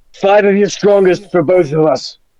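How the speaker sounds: high, bold, bursting-in calling voice. Playing a character bursting into a tavern, ordering drinks: yelling in character. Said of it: "I'm gonna yell".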